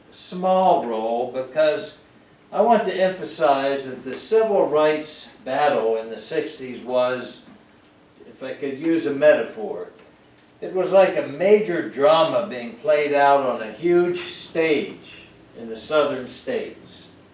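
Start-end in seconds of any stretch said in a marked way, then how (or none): 0.1-1.3 slow, stressed, weighted "small role". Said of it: "I stress the words".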